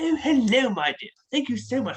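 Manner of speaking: put-on British accent. Retelling copying a passerby's accent on the road; mimicking a British accent. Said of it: "I'd hear someone's like British accent".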